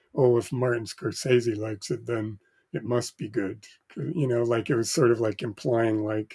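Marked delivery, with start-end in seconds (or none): none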